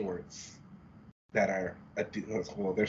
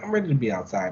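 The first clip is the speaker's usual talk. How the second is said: normal talking voice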